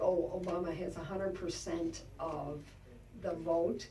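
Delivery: ordinary talk, nothing marked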